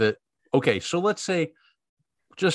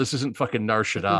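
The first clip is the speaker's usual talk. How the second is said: normal talking voice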